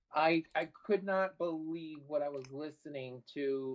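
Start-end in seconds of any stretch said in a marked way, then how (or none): none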